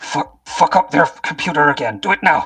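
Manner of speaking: hushed whisper with mouth close to the mic. Voicing a character near a box, whispering an urgent order: whispering. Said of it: "whispers to Six S B".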